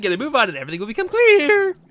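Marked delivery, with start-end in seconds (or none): 1.1-1.7 high voice cracking and breaking mid-phrase. Reading a character's lines aloud, voice cracking. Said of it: "my voice just cracked there".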